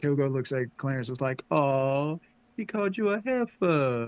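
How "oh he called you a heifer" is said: slow, swooping, heavy sarcasm, faux-friendly. Retelling how one man teased another after a joke, retelling a sarcastic remark. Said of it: "he said it sarcastically".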